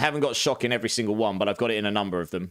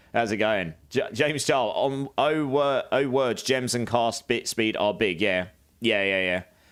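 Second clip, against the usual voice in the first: ordinary talk, nothing marked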